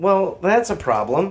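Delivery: slow, genuinely sad-sounding voice. Reacting to a reading about the Foundation's non-experts, sounding genuinely sad. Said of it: "You sound legitimately sad".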